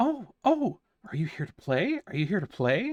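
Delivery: very high, sing-song creature voices calling out loudly. A game narrator voicing small creatures calling out to the players: high-pitched creature voices. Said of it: "high pitched voices calling out to you".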